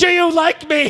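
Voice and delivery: put-on angry grown-up yelling, very high, drawn-out. Retelling how a man in a movie yells at a child: imitating an angry yell. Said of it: "angrily yell at a child".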